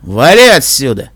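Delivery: low, husky, hoarse-throated voice. Pulling saddlebags off the narrator's back, a man gives a hoarse command. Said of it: "хрипло приказал он".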